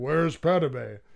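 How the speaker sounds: loud, booming, towering sci-fi villain voice. Retelling a movie scene in James Earl Jones's voice as Darth Vader. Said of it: "it's James Earl Jones talking like".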